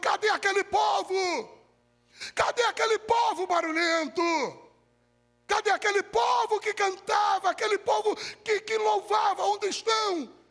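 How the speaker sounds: play-acted stunned, desperate, high, anguished shouting. Preaching, acting out the astonished world crying for the church: acting out an anguished shout. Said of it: "pasmo e angustiado, gritando".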